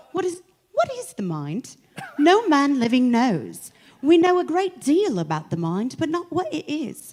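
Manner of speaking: put-on British accent. Asked by the other person to reread the passage, reading it in a british accent. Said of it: "Do it like with a British accent".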